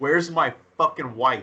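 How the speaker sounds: ordinary talk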